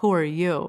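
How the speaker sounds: mock annoyed, angry, demanding male voice. Retelling a phone call from a detective: imitating an angry male voice. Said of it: "angry sounding male voice saying".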